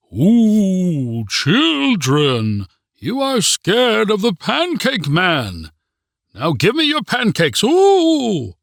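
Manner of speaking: put-on very high, swooping, old ghoulish groaning voice. Reading a story where a boy wears a pancake mask: groaning old ghoulish voice. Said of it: "began groaning in an old ghoulish voice".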